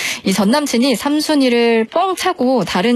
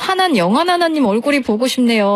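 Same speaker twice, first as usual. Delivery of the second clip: ordinary talk, nothing marked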